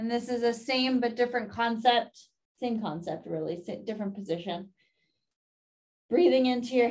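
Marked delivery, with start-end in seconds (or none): 6.1-6.9 cracking, breaking voice. Guiding a breathing exercise on camera, the instructor's voice cracks: voice cracking. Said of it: "my voice just cracked".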